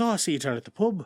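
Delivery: clumsy, bad put-on Irish accent. Speaker retelling a film scene where Colin Farrell's character visits, bad Colin Farrell Irish accent. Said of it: "I'm just gonna dip in and out of a bad Irish accent".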